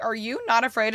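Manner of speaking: ordinary talk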